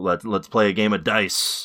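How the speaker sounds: ordinary talk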